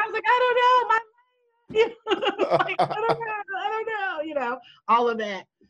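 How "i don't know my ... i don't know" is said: high, loud, tearful wail. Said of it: "started crying".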